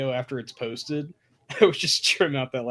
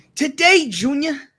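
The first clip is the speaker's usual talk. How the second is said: very loud, high, put-on New York accent; 13 semitones higher, 9 dB louder than usual. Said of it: "A New York accent".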